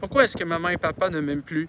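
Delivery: ordinary delivery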